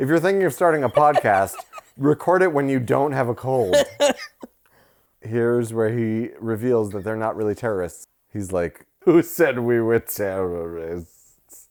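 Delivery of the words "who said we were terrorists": slow, drunken-sounding put-on man's voice. Podcast host quotes a character's line: drunk-man accent. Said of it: "What was that accent? ... It sounded like a drunk man".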